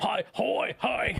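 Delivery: put-on very high, shouty sea-lion voice with Australian accent. Imitating the yelling sea lions from a film they discuss, Finding Dory sea lion voice. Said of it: "have Australian accents".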